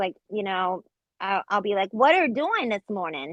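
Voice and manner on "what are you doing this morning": put-on baby talk. Retelling how they talk with a daughter at home: imitating baby talk. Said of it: "we just talk like that to each other".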